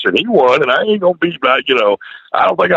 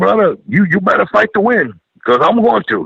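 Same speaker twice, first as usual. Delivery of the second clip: put-on Samoan-accented speech; 6 semitones higher than usual. Retelling what a big guy told him before their match, imitating a big Samoan accent. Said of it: "he get that big Samoan accent".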